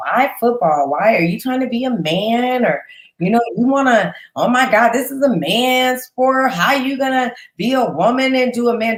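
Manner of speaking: high, whiny, complaining, needling, drawn-out man's voice. An interviewer imitates people questioning a woman playing football, mock-whiny voice. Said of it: "I'm kind of whiny voice".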